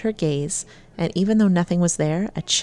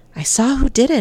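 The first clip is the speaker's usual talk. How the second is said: put-on wheezing voice, much higher pitch; 6 semitones higher, 5 dB louder than usual. Asked by Mom if okay, the narrator replies, wheezed. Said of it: "I wheezed".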